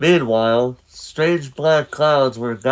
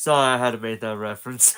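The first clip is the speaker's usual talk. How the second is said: usual speaking voice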